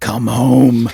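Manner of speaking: sudden loud eerie voice. Speaker quotes a sudden line from the water park arc, imitating Ross. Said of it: "like in in that in that way that Ross does".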